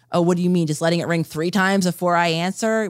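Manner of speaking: normal talking voice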